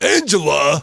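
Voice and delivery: loud, high-pitched calling out. Retelling a friend's impression at a table: Tony Danza impression. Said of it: "breaks into his best Tony Danza, uh, impersonation".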